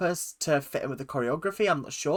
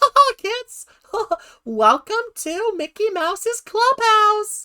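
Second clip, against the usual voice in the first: very high, loud, squeaky cartoon voice; 8 dB louder than usual. Show what the old voice up here was like, welcoming kids in a high Mickey Mouse voice. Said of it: "What happened to the Mickey Mouse voice?".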